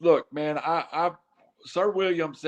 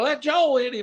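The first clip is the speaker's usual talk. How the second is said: mock high-pitched screaming; 8 semitones higher than usual. Retelling cheering at a wrestling match: imitating own scream. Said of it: "'cause I was screaming".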